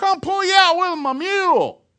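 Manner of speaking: very high, loud yelled holler. Telling a joke, the farmer answers the stranded driver, retelling a yelled reply. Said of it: "The guy yells back".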